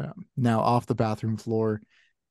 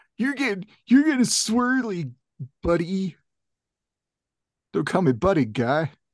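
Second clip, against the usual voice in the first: put-on 13-year-old voice, much higher; 8 semitones higher than usual. Acting out a scuffle between two story characters; 13-year-old kid impression. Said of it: "That was my 13-year-old impression".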